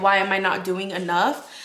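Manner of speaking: ordinary delivery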